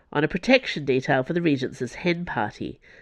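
ordinary delivery, nothing marked

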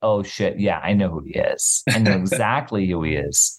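ordinary delivery

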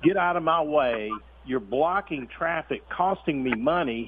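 mock furious, angry cussing rant. Retelling how a man at a roadside cussed him out: imitating someone angrily cussing. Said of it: "he started cussing me up and down".

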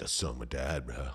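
full, all-out surfer-dude voice.

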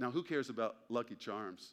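ordinary talk, nothing marked

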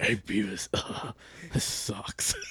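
breathy, whispered character voice. Retelling feeling sick after a vaccine dose: Butthead voice. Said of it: "Sounded like Butthead".

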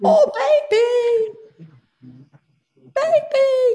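very high-pitched, loud, swooping exclamation. Talking about making funny little videos, calling out in a very high-pitched voice. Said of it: "I've got very high pitched voice".

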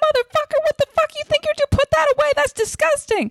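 high, fast, furious yelling.

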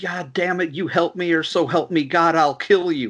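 mock pained, menacing, high mild half-yell. Describing a movie scene where a man holding another by the leg screams, imitating a screaming man. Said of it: "when he starts screaming".

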